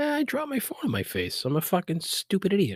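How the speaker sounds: mock dopey voice, very high, wide pitch swings.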